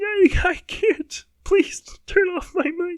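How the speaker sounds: very high-pitched, put-on weeping and sobbing. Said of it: "I'm already crying".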